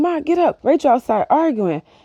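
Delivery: loud, high yelling. Retelling running down the stairs calling to ma, re-enacting the yell. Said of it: "as I'm yelling this".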